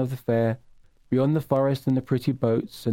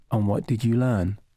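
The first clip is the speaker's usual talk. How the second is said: slightly more serious, graver tone; 3 semitones lower than usual. A tree asks a boy a question, in a slightly more serious voice. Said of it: "with a slightly more serious voice".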